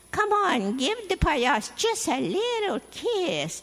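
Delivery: high, put-on falsetto head voice. Retelling how a man kept pulling a girl's hair, falsetto voice. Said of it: "falsetto voice".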